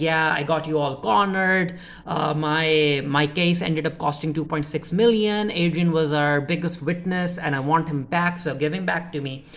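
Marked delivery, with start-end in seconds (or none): none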